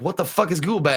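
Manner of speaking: ordinary talk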